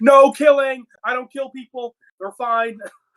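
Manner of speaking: put-on screaming, pitched very high. Retelling a scene where Aang makes people fall: Aang screaming. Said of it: "Aang is just screaming".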